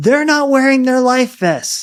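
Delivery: put-on high, slow, loud little kid shout. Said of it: "the kid was like".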